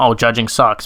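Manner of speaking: ordinary delivery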